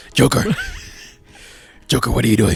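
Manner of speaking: superhero voice with big swooping pitch swings. Arguing about the best Batman, doing a Batman voice addressing the Joker. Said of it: "he talked like this".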